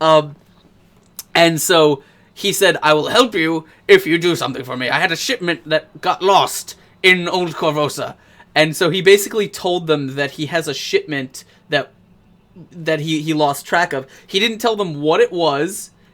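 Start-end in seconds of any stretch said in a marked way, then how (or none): 2.8-8.2 put-on storybook wizard voice. Retelling a character's offer to the group, in a wizard voice. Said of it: "because that's my wizard voice".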